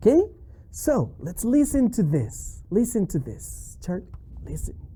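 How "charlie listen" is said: soft, unvoiced hushed whisper. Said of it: "hushing puppet before the song".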